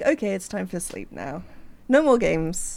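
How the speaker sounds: ordinary talk, nothing marked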